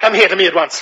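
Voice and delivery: authoritative, imperious, commanding tone. A man orders a beggar to come to him at once; commanding. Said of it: "You sound like you are accustomed to ordering people about".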